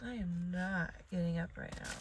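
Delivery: normal talking voice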